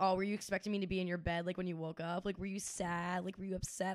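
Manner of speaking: normal talking voice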